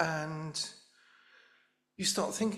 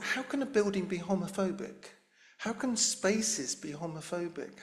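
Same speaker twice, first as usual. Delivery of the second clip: plain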